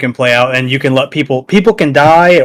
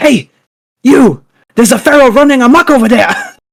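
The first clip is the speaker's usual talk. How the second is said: put-on very high clichéd Japanese accent; 11 semitones higher, 4 dB louder than usual. Retelling what a character said in a show, stereotypical Japanese accent. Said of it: "the most stereotypical Japanese accent".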